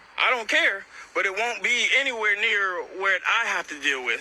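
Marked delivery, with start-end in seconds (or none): none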